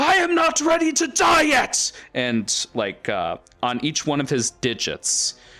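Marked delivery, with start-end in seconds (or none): 0.0-1.9 shrill, very high, loud screamed outburst. Narrating a story, voicing a character's outburst inside a creature, screaming. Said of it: "and he just screams".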